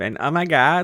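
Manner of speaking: put-on, most obnoxious spoiled-girl voice. Introducing a character for a lesson, in a Becky voice. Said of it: "like she sounds like this".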